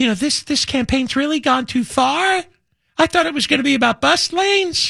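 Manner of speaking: put-on Valley Girl voice. Quoting a candidate's remark about her campaign, in a Valley Girl voice. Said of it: "in her Valley Girl voice".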